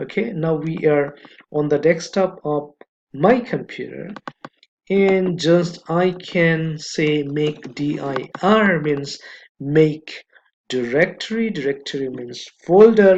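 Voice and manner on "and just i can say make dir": very slow, careful delivery. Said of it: "I'm speaking very slowly".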